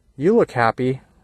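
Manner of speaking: dry, sarcastic tone. Retelling what a tourist said while walking past: imitating a sarcastic tourist.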